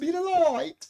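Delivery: very high, loud, put-on British accent. Repeating a viewer's words from the UK: imitating a UK accent. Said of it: "with her U K accent".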